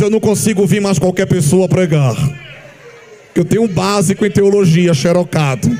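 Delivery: thickened, deep, pompous, self-important put-on voice. Mocking a short-course theology student who deepens his voice: mocking a deepened pompous voice. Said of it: "engrossou a voz e diz".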